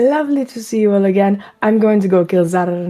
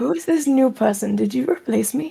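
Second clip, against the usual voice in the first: soft, quiet half-whisper, close and intimate; 4 semitones higher, 4 dB quieter than usual. Voicing a character on his toes asking about someone new: half-whispering in character. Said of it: "up on his toes to whisper in her ear".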